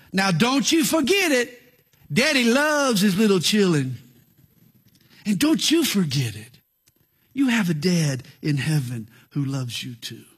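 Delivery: folksy down-home Southern preacher-style drawl. Retelling how a pastor stops mid-sermon to remind the people, down-home southern drawl. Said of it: "in his down home southern drawl".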